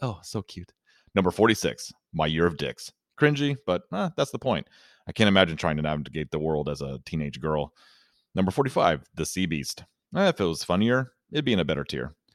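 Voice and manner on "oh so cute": soft, giggling murmur under the breath. Retelling what a lady in the theater said: imitating someone murmuring under breath. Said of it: "giggling and saying under her breath".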